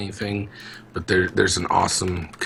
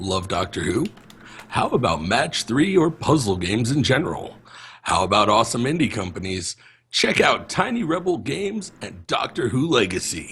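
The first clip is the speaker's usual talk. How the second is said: amateur attempted radio-ad announcer voice; 4 semitones higher than usual. Reading a text aloud to co-hosts, trying an attempted radio voice. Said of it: "I want to read it in my, my radio attempted voice".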